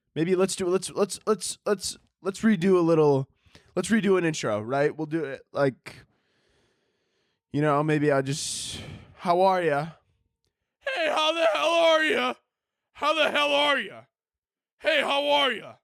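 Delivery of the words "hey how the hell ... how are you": loud, very high, aggressive dad voice. Redoing an intro, greeting everyone in an aggressive dad voice. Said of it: "Just like a really aggressive dad".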